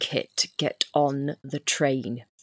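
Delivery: very quiet, low, hushed, intense voice. In a tabletop game, a player's character speaks to Kit at the train: quiet and intense. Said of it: "very quietly and intensely just say".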